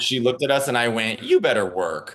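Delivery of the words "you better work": mock earnest, dead serious, no-joke delivery. Retelling what was said as Oprah walked by: retelling own dead serious line. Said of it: "dead serious".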